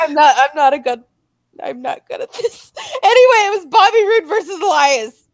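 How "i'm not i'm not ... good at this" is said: giggling and laughing through the words. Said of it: "I can't keep a straight face".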